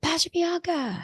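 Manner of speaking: mock shout, very high and called out. Retelling someone calling out from a distance: imitating someone shouting a name. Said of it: "I hear somebody shout out".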